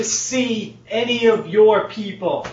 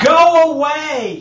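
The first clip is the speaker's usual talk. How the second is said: loud, high-pitched yell; 6 semitones higher, 5 dB louder than usual. Voicing a woman stopped at her fence line, toward the approaching group, yelling. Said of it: "she's still yelling".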